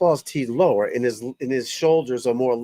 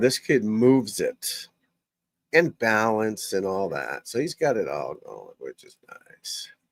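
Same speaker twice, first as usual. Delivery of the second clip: creaky vocal fry in the throat; 3 semitones lower, 4 dB quieter than usual. Commentating on a young golfer's game, with vocal fry. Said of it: "I don't know why my throat has that vocal fry".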